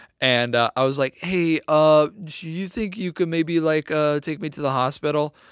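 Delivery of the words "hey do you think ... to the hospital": put-on trembling voice. Retelling his own words to a man who said hello, retelling own shaky voice. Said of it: "my voice was probably real shaky".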